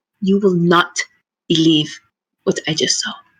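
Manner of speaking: hushed, secretive, conspiratorial half-whisper. Voicing a character leaning in to share gossip: conspiratorial half-whisper.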